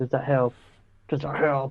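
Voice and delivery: put-on whispering. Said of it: "he's whispering in your ear saying".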